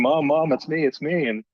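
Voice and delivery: put-on little boy voice, screaming. Retelling how a son shouted while caught in a headlock: imitating a child screaming. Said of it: "he's screaming".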